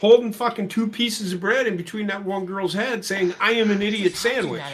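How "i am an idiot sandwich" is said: normal talking voice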